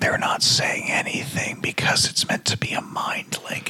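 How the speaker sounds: mock movie whisper, soft and breathy.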